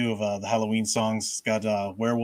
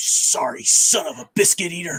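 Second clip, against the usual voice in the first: play-acted sharp-edged angry outburst, pitched up; 7 semitones higher, 6 dB louder than usual. Imitating the speaker's mother when something falls apart: mock-angry sharp edge. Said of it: "just this edge comes in her voice like".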